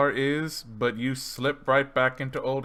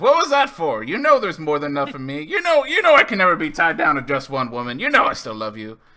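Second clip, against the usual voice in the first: very loud, booming, swooping big character voice; 3 semitones higher, 8 dB louder than usual. In an actual play game, [name] answers after being nipped on the ear: [name]'s character voice.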